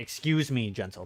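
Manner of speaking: deep distorted character voice. Narrating a scene where an ominous figure walks up behind the group; deep, distorted voice. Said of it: "His voice is deep, kind of distorted".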